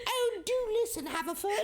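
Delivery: put-on very high, old-fashioned 1940s posh British accent. Discussing accents everyone can do, the speaker demonstrates: 1940s posh british accent. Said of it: "nineteen forties posh for sure".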